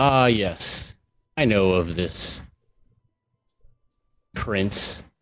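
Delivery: haughty, lofty drawl, spoken slowly. The creature the party carries steps up and answers them, in a high and mighty voice. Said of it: "high almighty kind of voice".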